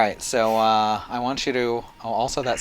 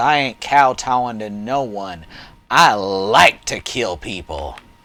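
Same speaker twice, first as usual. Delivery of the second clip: venomous, menacing snarl; 5 dB louder than usual. A player voices her character's reply during the game, snarling. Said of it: "She snarls".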